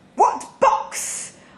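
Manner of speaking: words spat out sharply. Helen retorts to a man urging positive thinking, spat. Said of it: "I spat".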